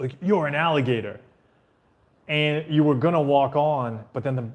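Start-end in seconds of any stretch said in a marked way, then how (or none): none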